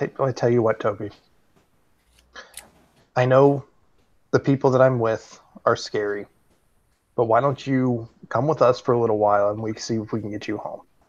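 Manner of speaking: quiet, kept-down, hushed persuasive urging. In a role-play game, his character speaks aside to Toby: hushed voice. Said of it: "I kind of say in a hushed voice".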